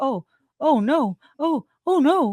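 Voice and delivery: very slow, high, drawn-out, acted dripping sarcasm. Retelling how someone reacts to the news: imitating a sarcastic tone. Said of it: "when he's so sarcastic and he's like".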